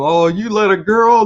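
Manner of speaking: high, loud jeering and taunting yell. Retelling how the class taunted him: imitating a class yelling. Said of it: "yelling at him".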